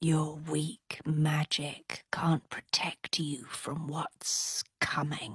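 low, hushed, sneering, taunting snake voice. Narrator reading an eely skim taunting the prince: taunting snake's voice. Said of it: "the skim taunted".

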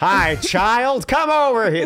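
very high, loud, slow calling voice. Joking about a child named Child, doing a Tom Hanks impression. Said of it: "That's my impression of Tom".

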